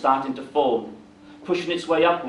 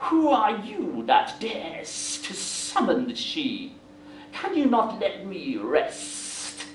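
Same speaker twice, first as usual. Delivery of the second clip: slow, hissing creature voice; 3 semitones higher, 4 dB quieter than usual. Narrating a story, the summoned creature answers the warlock with a hissing reply. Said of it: "It hissed a response".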